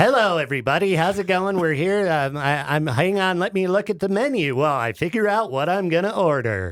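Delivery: mock radio announcer voice. Mocking how a radio voice would sound in everyday talk: put-on fake radio voice. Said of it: "the fake radio voice".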